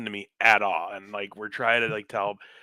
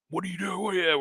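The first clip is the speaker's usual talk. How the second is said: put-on yelling, higher; 8 semitones higher than usual. Retelling how police yelling at a group on a curb: imitating a cop yelling. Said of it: "starts yelling at us".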